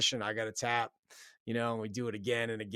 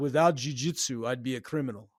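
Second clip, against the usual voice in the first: unruffled, composed, matter-of-fact tone, voice raised; 2 semitones higher, 7 dB louder than usual. Retelling what a guy said after calmly looking at him: imitating his calm deep voice. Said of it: "he had a deep voice".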